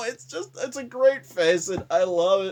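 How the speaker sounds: laughing hard, words cracking up with laughter. Podcast host reacts to a photo for the episode: laughing hard. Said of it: "I'm laughing so hard right now".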